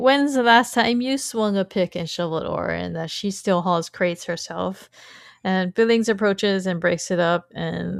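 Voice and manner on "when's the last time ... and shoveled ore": ordinary talk, nothing marked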